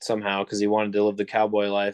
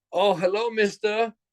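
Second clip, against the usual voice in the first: very high, heavy, strong put-on Chinese accent; 12 semitones higher than usual. Retelling a man's greeting when the speaker came into the kitchen: strong Chinese accent. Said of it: "a really strong Chinese accent".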